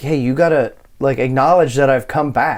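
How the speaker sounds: ordinary talk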